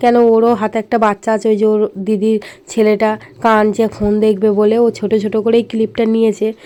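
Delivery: soft, hoarse voice. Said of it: "আমার গলা শুনে তোমরা বুঝতেই পারছো, আমার প্রচুর ঠান্ডা লেগেছে".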